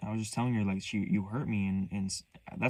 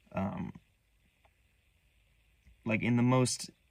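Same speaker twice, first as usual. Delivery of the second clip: usual speaking voice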